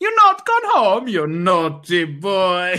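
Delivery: awful, swooping, badly done put-on Italian accent. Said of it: "Awful Italian accent".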